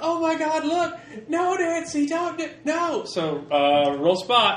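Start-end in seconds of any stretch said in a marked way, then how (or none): 0.0-3.0 very high, drawn-out, panicked shrieking screams. Voicing bystanders as everybody starts screaming: screaming in panic. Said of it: "everybody starts screaming".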